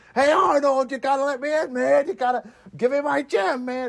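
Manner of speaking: very high-pitched, heated, angry New York accent. Joking about sounding like an Uncut Gems character: angry New Yorker voice.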